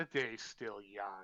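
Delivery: low, quiet, darkly wicked tone. Voicing a character who eyes you up and down, with a wicked smile. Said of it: "give you a very wicked smile and go".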